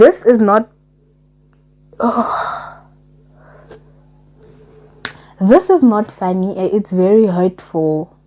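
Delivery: tearing up, voice choked with tears. Reacting to a hurtful story read aloud, tearing up. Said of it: "I'm tearing up".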